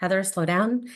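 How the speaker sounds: usual speaking voice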